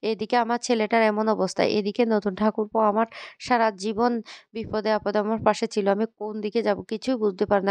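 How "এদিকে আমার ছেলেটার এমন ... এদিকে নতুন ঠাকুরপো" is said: plain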